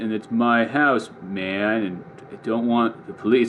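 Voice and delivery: very slow, unhurried, drawn-out speech. Imitating how the guys would just be talking: very slow speech. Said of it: "a lot of the guys would talk like really slow ... they would just be talking like this".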